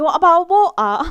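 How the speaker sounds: put-on high, loud northern English accent. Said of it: "my brain starts adopting that".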